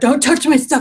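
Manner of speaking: put-on furious, high, hostile screaming. Retelling how a man at the checkout screamed at a woman: imitating a man screaming. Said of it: "started screaming at her".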